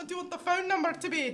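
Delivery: put-on very high, very loud scream in a Scottish accent. Retelling yelling questions at mom: imitating own Scottish-accent yell. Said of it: "I screamed at her in a Scottish accent".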